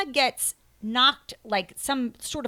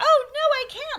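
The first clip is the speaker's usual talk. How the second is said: mock frightened woman's voice, higher and louder; 5 dB louder than usual. Retelling how a film character acts scared: imitating a scared woman's voice. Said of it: "doing a woman's voice".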